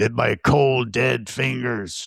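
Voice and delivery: slow, drawn-out movie-star delivery. Trying to recall who a narrator sounds like, speaker quotes him: Charlton Heston impression. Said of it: "He he sounds like Charlton Heston".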